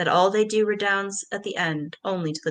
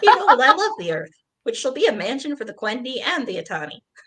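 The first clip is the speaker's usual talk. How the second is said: high, froggy felt puppet character voice; 5 semitones higher, 4 dB louder than usual. Redoing a character's lines the way you once did them: Kermit the Frog voice. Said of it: "doing Iluvatar as Kermit the Frog".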